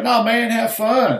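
put-on very high, slow, drawn-out Boston accent. Retelling what a flight instructor said: imitating a Boston accent. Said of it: "You can tell the accent".

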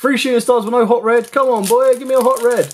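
loud, shouted, pleading call. Listing cards as they come up, wanting a Hot Red, shouting for a card. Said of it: "Don't know why I'm shouting for a Hot Red".

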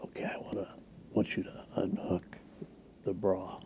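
close, breathy, hushed whisper. Retelling what a performer said on stage: imitating a whisper. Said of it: "she whispers".

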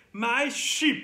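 ordinary delivery

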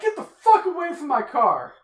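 loud, high, mock angry yell.

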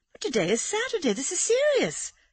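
gasping, very high gasped exclamation. Amanda responds to Laura, gasping. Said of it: "gasped Amanda".

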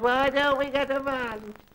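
wailing, high, awful ghostly moan. Mocking the angry figure that appears at every bike delivery, mock moaning in an awful voice. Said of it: "moaning in an awful voice".

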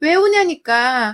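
loud, slow, frustrated yell.

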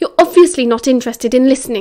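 ordinary delivery

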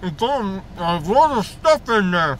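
speaking with a mouth full of food. Eating Cheetos while filming, talking with mouth full. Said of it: "My mouth is full".

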